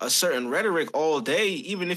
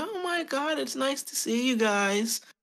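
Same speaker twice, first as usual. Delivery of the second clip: very high, slow, thrilled and delighted voice; 9 semitones higher than usual. Retelling how a waiter who recognized them greeted them: imitating the waiter. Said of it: "she recognized us and was like".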